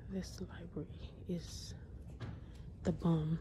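hushed whisper. Filming in a library, the speaker talks to viewers, whispering. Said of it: "Sorry that I'm whispering".

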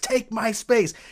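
put-on high scream. Retelling an acting exercise shouted at each other: retelling a scream. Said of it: "we're screaming at each other".

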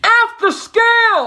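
very high yell, scale stretched and drawn out. Addressing the audience and friends out in Ohio, yelling. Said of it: "I'm yelling it to you all the way out in Ohio".

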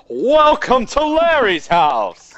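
loud, showy, sing-song, enthusiastic, drawn right out. Showing another player how to announce the house: enthusiastic announcement. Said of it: "You should be like".

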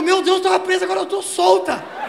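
high, loud, relieved, excited woman's voice.

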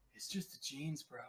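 very quiet, hushed voice. A player's character leans in to Merman to speak, very quiet. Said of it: "I lean in really quietly".

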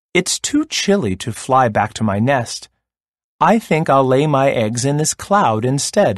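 ordinary delivery, nothing marked

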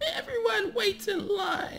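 put-on very high-pitched old woman's voice. Narrating a woman smacking your hand with her spoon, in an elderly lady voice. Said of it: "says in an elderly lady voice".

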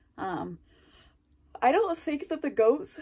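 speaking mid-yawn. Talking about water heaters for the animal pens, yawning while talking. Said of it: "yawning for the sixth time".

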